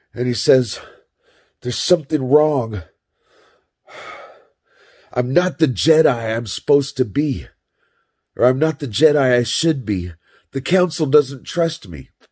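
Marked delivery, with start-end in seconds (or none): 1.6-12.1 frustrated, upset venting, pitched up, acted out. Retelling a scene where the Jedi goes back to Padme, mock-frustrated and upset. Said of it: "he's frustrated and he's upset".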